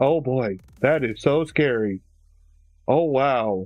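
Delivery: badly acted, unconvincing fake fright, drawn out. Mocking a man's reaction to a yell in the woods, mock bad-actor fake fear. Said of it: "He sounds like a bad actor trying to act like".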